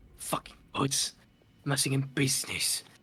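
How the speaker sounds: hushed, barely voiced, whispered grumbling mutter. Voicing Jotun cursing the gods: muttered under his breath. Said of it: "just under his breath, just very quietly".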